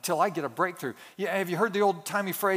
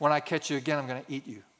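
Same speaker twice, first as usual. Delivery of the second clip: put-on threatening tone, lower pitch; 4 semitones lower than usual. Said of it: "and I say".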